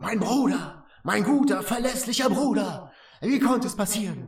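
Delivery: sibilant, hissing voice. A game master voices someone heard through a vault door, in a hissing voice. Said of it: "ihr hört jetzt eine zischelnde Stimme".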